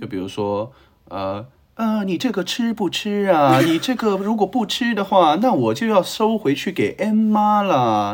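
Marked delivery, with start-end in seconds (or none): 2.0-8.1 Hong Kong drama Mandarin dub accent, pitched way up. Imitating the Mandarin dubbing of Hong Kong TVB dramas: imitating TVB Mandarin dubbing accent. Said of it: "这种口音".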